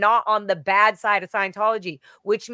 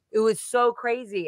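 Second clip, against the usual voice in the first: usual speaking voice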